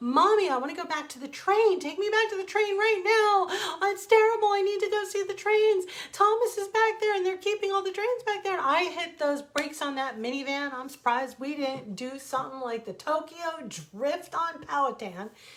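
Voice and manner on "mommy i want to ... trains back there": very high, long, furious wailing screaming tantrum. Mother retelling her son screaming from the car, imitating a child's angry scream. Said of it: "a long, angry scream of perfect sentences".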